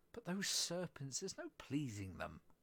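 plain reading voice

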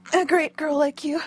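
plain

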